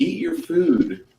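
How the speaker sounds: gentle, soothing coaxing. Voicing a female character in the game, in a soothing voice. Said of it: "She says in a soothing voice".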